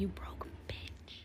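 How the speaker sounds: slow, soft whisper. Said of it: "I'm whispering because my baby's asleep".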